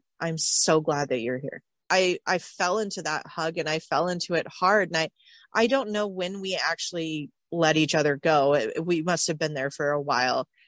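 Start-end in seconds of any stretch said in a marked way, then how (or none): 0.2-1.6 imitated whisper. Retelling what someone whispered during a hug at the airport: imitating a whisper. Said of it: "he just whispers in my ear".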